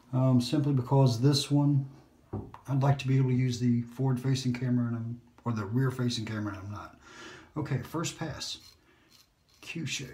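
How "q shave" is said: soft, hushed whisper. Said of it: "Why am I whispering?".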